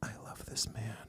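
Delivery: breathy, hushed, faked heartfelt gushing whisper. Retelling how a woman hugged her with fake emotion, imitate her line. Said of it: "She was like she was like fake emotion".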